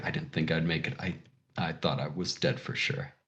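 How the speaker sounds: whispered through tears, very soft, barely audible. Narrator voices a character who pulls you into a hug, whispering while crying. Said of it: "he's just like whispering".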